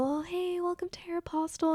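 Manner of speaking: barely audible, tiny, high, timid, shy voice. Retelling shy greetings to customers at a first job: imitating own quietest voice. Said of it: "in my quietest voice".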